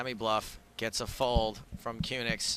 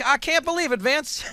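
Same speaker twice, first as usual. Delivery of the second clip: put-on Southern accent, shrill, loud and booming; 13 semitones higher, 8 dB louder than usual. Asked by a co-host to show it, doing poker commentary in a southern accent. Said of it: "Let's hear your southern accent".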